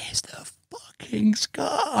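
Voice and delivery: mock, very high, drawn-out, rasping triumphant cry. Retelling catching a big fish, looking back at a friend: imitating his own scream. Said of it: "I was screaming".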